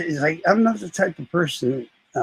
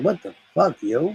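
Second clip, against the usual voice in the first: voice breaking a little, slight crack. Retelling an angry reply to someone, imitating own voice cracking. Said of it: "gave him a bit of a crack in my voice".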